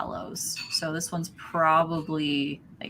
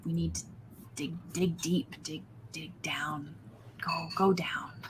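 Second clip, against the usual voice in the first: quieter muttering under the breath; 6 dB quieter than usual. The narrator voices a man still talking to himself, muttering. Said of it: "He's still kind of just muttering like".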